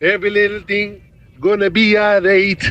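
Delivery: put-on Hindi film-style voice. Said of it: "What a great impression of [name]".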